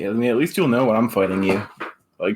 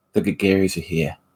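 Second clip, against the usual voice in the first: hushed, lower-pitched whisper; 3 semitones lower than usual. Speaker acts out what he'll say close in a man's ear: whispering. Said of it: "I'm gonna whisper".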